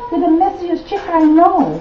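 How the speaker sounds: high, shrieking, screaming scolding voice.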